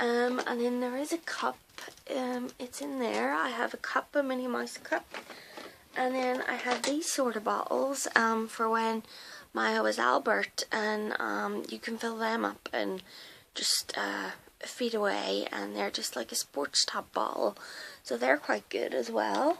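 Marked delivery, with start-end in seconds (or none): 13.5-15.5 whispered voice. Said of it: "my voice is gone".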